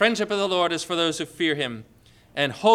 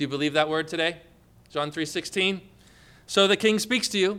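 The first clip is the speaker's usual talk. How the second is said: ordinary talk, nothing marked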